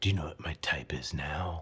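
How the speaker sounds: deep, low whisper in a smooth-talker voice. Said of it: "In, like, that deep voice".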